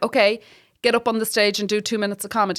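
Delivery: plain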